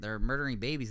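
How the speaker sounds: normal talking voice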